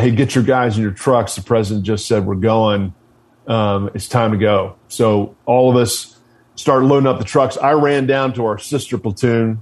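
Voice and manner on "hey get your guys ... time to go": ordinary talk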